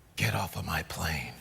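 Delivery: very low, hushed, soft, slow delivery. Comedian performs for an audience: Harrison Ford impression. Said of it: "You do an impression of Harrison Ford on the plane".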